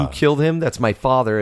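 ordinary talk

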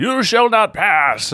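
very high-pitched wizard voice. Joking about a monster that talks silly: Gandalf voice. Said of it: "Like Gandalf".

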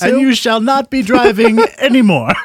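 very high, very loud put-on British accent. Continuing the imagined English DMV telling an old man he can't drive, put-on British accent. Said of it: "Spot on British accent".

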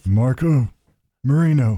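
mumbled mob-boss voice, as if marbles in mouth. Saying a disgraced cop's name like the Godfather would: marbles-in-mouth Godfather voice. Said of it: "say it like the Godfather would say it? You know, like you've got marbles in your mouth".

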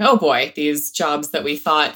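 ordinary talk

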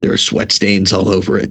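put-on whispering. Retelling what a caller said on the phone: retelling a whisper. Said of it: "whispering to me".

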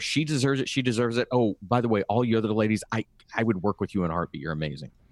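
ordinary talk

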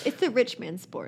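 sarcastic through and through. Chatting about surfing and being poor, totally sarcastic. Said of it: "I'm being totally sarcastic".

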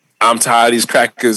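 plain

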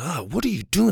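angry tone. Showing how tone changes a question, curious versus angry, angry. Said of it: "I'm angry with what you're doing".

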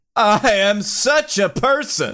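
every word stretched out, very slow. Playing The Rock in a read-through, answering Keith: Seinfeld voice. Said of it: "Why'd you say that like Seinfeld?".

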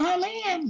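put-on very high, squeaky voice like a young girl. Recalling answering a knock at the cabin door: squeaky voice like a young girl. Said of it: "I said with a squeaky voice like a young girl".

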